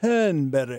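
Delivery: sophisticated, posh aristocratic English accent.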